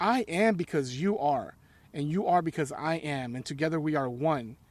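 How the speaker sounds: ordinary talk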